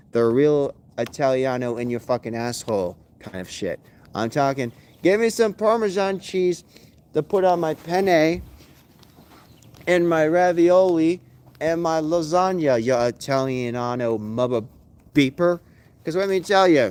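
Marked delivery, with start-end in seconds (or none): none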